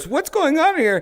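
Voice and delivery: very high, surprised, startled voice. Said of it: "Bobby Lee enters the room and goes".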